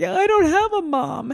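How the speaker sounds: tearful crying voice, very high, slow and drawn out. Retelling crying on the couch during shows: imitating own past crying. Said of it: "and then I'd be on the couch crying".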